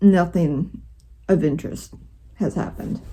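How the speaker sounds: usual speaking voice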